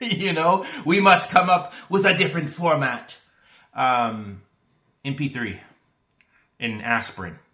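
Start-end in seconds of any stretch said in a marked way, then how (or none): 0.9-3.2 loud, quick, attempted German accent. Joking about compact disc makers needing smaller files, in an attempted German accent. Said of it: "If that's a German accent".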